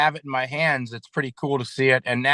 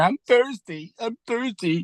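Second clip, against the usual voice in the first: acted-out weepy, sobbing, high-pitched voice; 9 semitones higher than usual. Retelling how a cuffed man begged for water, imitating someone crying. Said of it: "and he's crying. And he's saying".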